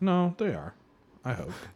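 deeply sad, crestfallen, saddest voice. Answering someone who insists good candidates are out there, in the saddest voice. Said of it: "Brian said that in like the saddest voice".

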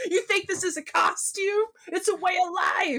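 play-acted, high, furious punk griping. Imitating a humorless punk character from a film: Suicide's angry crabbing. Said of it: "he's so angry".

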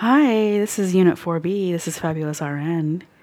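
seductive, low, soft voice. Taking a turn answering a pretend phone call for Unit 4B: sexy voice. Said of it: "answer the phone call for unit 4B in a sexy voice".

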